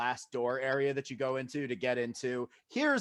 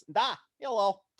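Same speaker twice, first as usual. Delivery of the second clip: orc character voice, pitched up high; 8 semitones higher than usual. Narrating a scene, the speaker voices Orkgood answering a greeting: Orkgood character voice. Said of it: "And Orkgood says".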